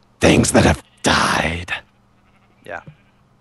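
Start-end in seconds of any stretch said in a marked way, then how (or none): 0.2-1.7 very deep, low, loud spooky voice. Reading out the wording of an imagined sign, in a scary voice. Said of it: "Scary voice".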